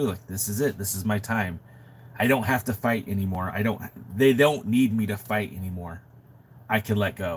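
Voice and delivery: ordinary delivery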